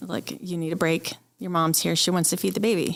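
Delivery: ordinary talk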